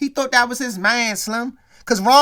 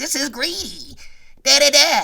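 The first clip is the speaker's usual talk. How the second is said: very slow, swooping, sing-song cartoon baby talk. Mocking what a woman said about suing Dwayne, Rugrats voice. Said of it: "Doing the Rugrats voice".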